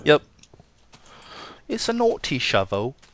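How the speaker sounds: put-on English accent. While making a shovel, the speaker comments on it in an English accent. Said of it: "That's such a good English accent".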